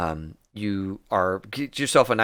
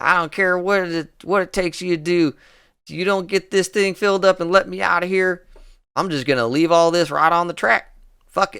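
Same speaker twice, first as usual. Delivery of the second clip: drawling voice, higher and slower; 9 semitones higher, 5 dB louder than usual. Narrating a scene, voicing a man being yelled at to load up, drawling voice. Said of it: "He's got kind of a drawl to his voice".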